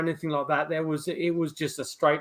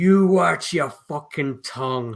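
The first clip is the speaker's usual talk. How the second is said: put-on disembodied-sounding Irish accent, plain flat delivery. Speaker retelling a voice heard through headphones during dead silence: Irish accent. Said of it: "I got this Irish voice saying".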